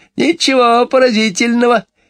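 very high, tittering, giggling delivery. Narrator reading a character's reply to an exclamation, giggling. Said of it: "хихикнула миссис Корри".

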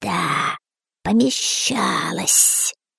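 whispered, breathy, hissing snake voice. Narrator reads the snake answering the boy's question, hissing snake voice. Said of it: "прошипела змея".

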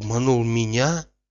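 ordinary delivery

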